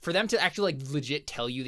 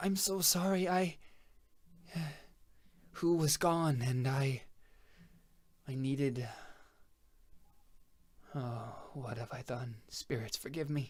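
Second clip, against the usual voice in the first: broken, sorrowful, hushed character voice; 5 dB quieter than usual. Voicing a character who admits what she has done: sad character voice. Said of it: "shakes her head, like, sadly".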